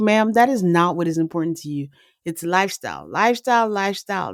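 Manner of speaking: usual speaking voice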